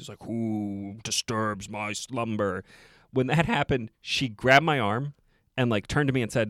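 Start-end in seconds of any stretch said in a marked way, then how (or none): 0.2-2.6 very slow, deep, scary, menacing voice. Retelling how a Sphinx cat rises out of the sand and speaks; put-on deep, scary voice. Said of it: "he's got this deep, scary voice".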